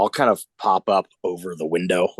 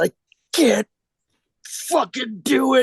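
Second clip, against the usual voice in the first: high, slow, tearful weeping words. Retelling what a man pointing a gun said, imitating him crying. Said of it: "And he goes".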